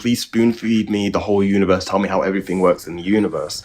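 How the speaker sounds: mocking, scornful delivery. Retelling what another guy asked: imitating someone mockingly. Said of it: "What I was mocking there was this guy basically saying".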